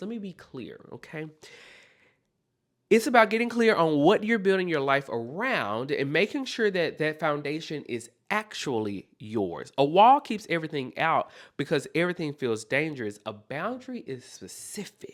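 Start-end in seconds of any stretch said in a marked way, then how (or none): 0.0-1.3 soft, hushed diva delivery. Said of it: "in my Karen Huger voice".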